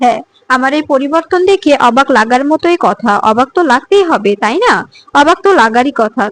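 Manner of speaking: ordinary delivery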